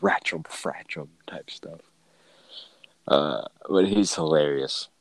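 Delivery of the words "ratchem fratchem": put-on muttering voice. Retelling a boss's habit of frustrated muttering: imitating mumbling under his breath. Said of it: "mumbling under his breath".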